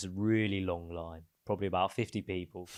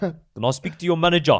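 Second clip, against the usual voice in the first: put-on, very loud, high-pitched South African accent; 9 semitones higher, 12 dB louder than usual. Retelling a man in a shop asking to speak to the manager, put-on Safa accent. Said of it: "I want the Safa accent".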